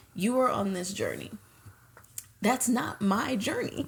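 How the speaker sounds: play-acted, bone-dry, unjoking, dead-serious deadpan delivery. Retelling a fight over an outfit, imitating Kim Kardashian straight-faced. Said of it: "Kim said with a straight face".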